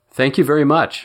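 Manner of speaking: sincere, earnest voice. Narrator reading Roger thanking Ted Valmont with a handshake: earnest. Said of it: "said Roger earnestly".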